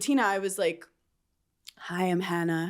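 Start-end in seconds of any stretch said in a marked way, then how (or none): 1.8-2.7 quiet, gentle voice. Retelling how she first greeted someone delicately, retelling a soft-voiced hello. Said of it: "Soft voice".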